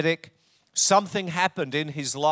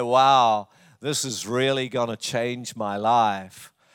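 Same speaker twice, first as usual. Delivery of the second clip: imitated Southern drawl; 4 semitones lower than usual. Retelling what a homeless man said on getting help, southern drawl. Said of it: "in his beautiful southern drawl".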